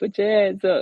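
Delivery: voice breaking into a very high squeak. Imagining himself trusted with a gun, the speaker does a mock voice crack. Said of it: "Oh shit, voice crack".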